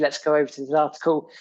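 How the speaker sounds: normal talking voice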